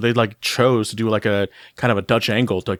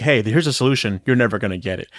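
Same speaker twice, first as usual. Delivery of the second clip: mocking, cocky put-on tone. Retelling how they offer a solution they say can't be reached: imitating a cocky taunt. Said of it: "they do say it in, like, a cocky way".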